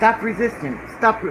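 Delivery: normal talking voice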